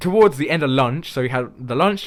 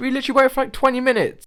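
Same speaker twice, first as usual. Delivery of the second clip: ordinary delivery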